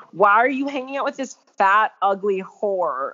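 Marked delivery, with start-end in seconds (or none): none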